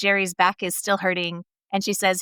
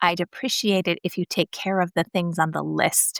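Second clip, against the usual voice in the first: put-on icy, overly calm composure. Describing a wife in a show answering her husband; mock icy, overly calm. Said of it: "icy, overly calm back".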